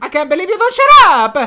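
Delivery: fake exasperated character voice. Doing voices of video game characters: fed up Mario voice. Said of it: "A little bit of genuinely fed up Mario".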